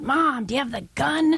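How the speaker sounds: mock sudden, high, blurted call-out. Retelling a daughter's words outside a grocery store: imitating a shout. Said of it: "she shouts out".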